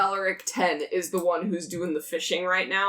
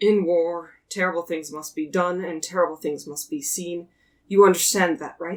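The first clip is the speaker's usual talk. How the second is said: acted-out mock sigh. Retelling what she said when she leaned in to you, retelling her sigh. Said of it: "She sighs and says".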